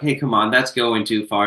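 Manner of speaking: usual speaking voice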